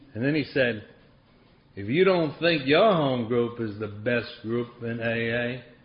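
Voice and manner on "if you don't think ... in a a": slow, thick Southern drawl. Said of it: "he had this thick Southern accent".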